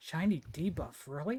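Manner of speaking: quiet grumbling muttered under the breath. Speaking in character so only a nearby character hears: muttered under the breath. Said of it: "I just say under my breath".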